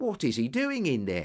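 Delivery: ordinary delivery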